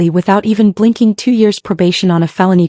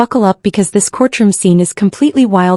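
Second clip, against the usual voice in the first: plain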